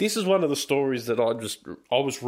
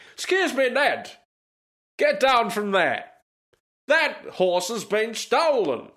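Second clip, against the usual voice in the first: put-on, very high-pitched English accent; 10 semitones higher, 3 dB louder than usual. Storyteller voices a trooper speaking to a man on a horse, english accent. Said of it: "We'll use an English accent".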